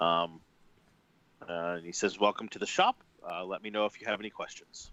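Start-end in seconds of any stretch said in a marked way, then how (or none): 2.2-4.9 put-on heavy foreign accent with clean, clearly spoken English. Narrator voices a shopkeeper greeting you as you come in, heavily accented english. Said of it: "His English sounds heavily accented but clean".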